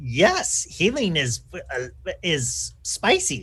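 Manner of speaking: very slow, dim creature voice, every word dragged. Speaking as a kobold who is not very intelligent: Ufa as a dim kobold. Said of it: "Ufa is not the most intelligent or learned of kobolds".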